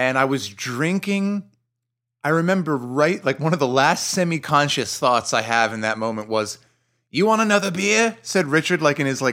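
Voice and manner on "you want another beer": put-on mixed American-British accent, higher. Retelling what Richard asked during the game: Richard's part American, part British accent. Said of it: "part American, part British accent".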